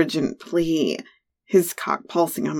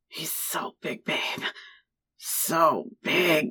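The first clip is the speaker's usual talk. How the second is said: growling, quieter; 7 dB quieter than usual. A lover speaks to the narrator during sex, growled. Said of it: "you growled".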